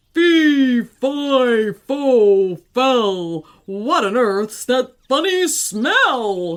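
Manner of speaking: booming storybook giant voice, drawn-out fi. Reading a story aloud, the narrator voices the giant sniffing the air: big booming giant voice. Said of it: "in a big, booming voice".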